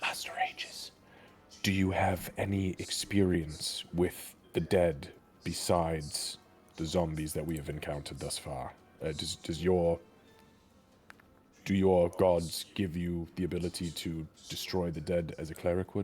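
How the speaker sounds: hushed character whisper. Voicing a character asking a companion about fighting the dead: whispering in character. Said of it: "I'm gonna whisper to Aegis".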